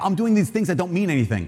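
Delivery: ordinary talk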